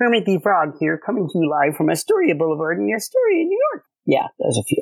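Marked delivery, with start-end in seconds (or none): 0.0-3.8 pitched up, with pitch swinging around. Asked for impressions on the spot, the speaker performs one: Kermit the Frog voice. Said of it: "can you leave us with maybe some impressions?".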